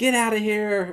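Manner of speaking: mock shouted yell. Retelling Adam Driver chasing Ron down the street, retelling Adam Driver's yell. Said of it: "Adam Driver literally yells at Ron".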